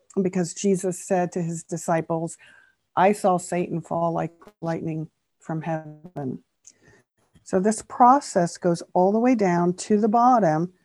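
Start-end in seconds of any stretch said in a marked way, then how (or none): none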